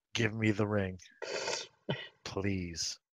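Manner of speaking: intimidating, threatening, menacing tone. Demanding a ring from a little girl in character: intimidating tone. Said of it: "I say in a intimidating tone".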